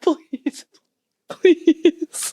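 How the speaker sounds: high, pleading voice through tearful laughter. Begging a co-host to answer a question: begging while crying with laughter. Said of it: "She's literally crying".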